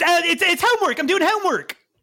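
panicked voice. As Liberty, hearing Thread Count's angry voice and caught out: panicked Liberty. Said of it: "he panics".

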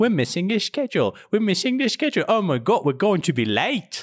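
put-on English street-trader accent, very high. Imitating the person they're talking to, in a put-on English accent. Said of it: "an English".

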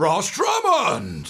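loud, high call, aggressive on the end. Imitating how he calls out a name: mock-aggressive on the end. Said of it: "Like that. And he gets a bit aggressive on the end".

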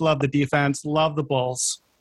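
sarcastic, mocking, fake enthusiasm. Echoing another speaker's pick with mocking praise: sarcastic mocking praise. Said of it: "that's total sarcasm".

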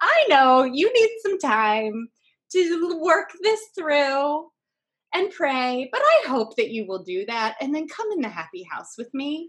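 affectionate, loving. Recounting what he said while pointing at their little house: retelling an affectionate tone. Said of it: "he said this affectionately".

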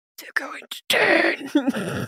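soft mutter out of the corner of the mouth. A player voices their character muttering to another character, out of the side of her mouth. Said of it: "at the side of her mouth say".

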